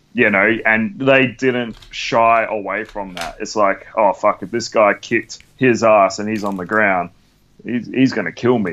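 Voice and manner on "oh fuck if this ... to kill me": plain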